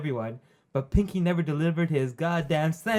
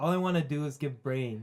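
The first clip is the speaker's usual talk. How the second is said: usual speaking voice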